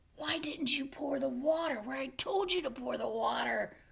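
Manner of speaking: fast, rushed, through clenched teeth. Narrating a story, soaked Rocky questions his assistant, through clenched teeth. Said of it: "asked between clenched teeth".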